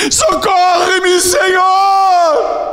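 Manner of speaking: put-on very high shouted pleading cry, Senhor drawn out. Retelling the Gospel story, the speaker voices the mother calling after Jesus: acting out a woman shouting. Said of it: "E ela veio gritando".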